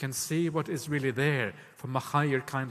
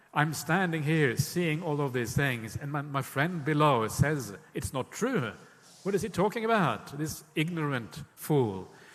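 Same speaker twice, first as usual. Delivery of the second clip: ordinary delivery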